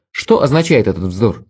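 plain reading voice

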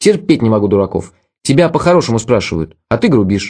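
ordinary delivery

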